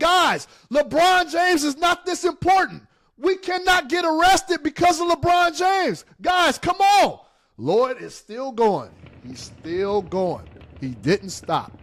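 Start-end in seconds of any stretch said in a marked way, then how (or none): 0.0-7.2 acted, high-pitched pleading scream. Retelling screaming at the guys while Lloyd kept going, retelling a scream. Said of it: "And I'm screaming. I'm like".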